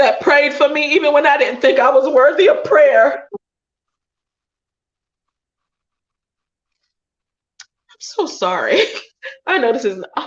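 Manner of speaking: tearful speech, talking through crying. Remembering the people who stood by and prayed for the speaker, crying while talking. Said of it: "You got me crying more".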